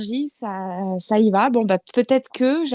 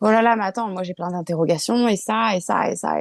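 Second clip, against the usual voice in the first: ordinary talk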